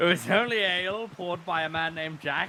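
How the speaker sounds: put-on acted drunk voice. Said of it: "I can hear it in your voice".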